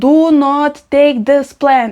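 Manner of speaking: put-on insistent, deliberate, slow, mild drawn-out yell. Retelling the husband's reaction to finding a plant: imitating husband screaming. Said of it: "My husband was screaming".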